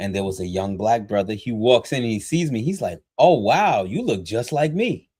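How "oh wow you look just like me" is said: high, joking, tossed-off remark. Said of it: "he said it in, like, a, you know, joking way".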